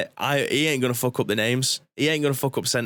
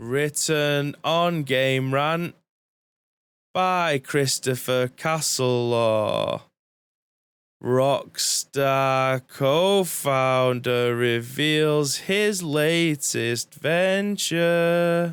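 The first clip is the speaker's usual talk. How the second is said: very slow, drawn-out, every word stretched. Reading out a news headline after being told to talk slowly: very slow speech. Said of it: "Just talk slowly".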